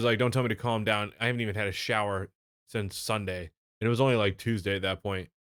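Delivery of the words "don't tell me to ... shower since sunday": ordinary delivery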